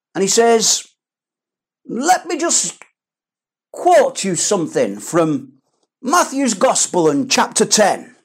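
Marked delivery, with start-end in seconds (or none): 1.8-7.9 grandly pompous, self-important devil voice. Acting out the devil pulling out his pocket Bible to quote scripture, mock-pompous devil voice. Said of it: "in his pompous voice".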